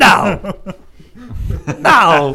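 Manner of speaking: blunt, defiant, loud and emphatic. Showing how a film line gets copied when saying no: imitating a movie character's "no". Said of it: "I say it like that".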